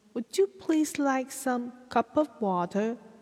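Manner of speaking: quick, proper Boston accent with r sounds dropped. Explaining american regional accents, boston accent, no r sounds. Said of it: "比较一板一眼，有那种英式绅士腔的不发R 的音，它是波士顿口音。".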